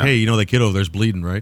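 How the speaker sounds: ordinary talk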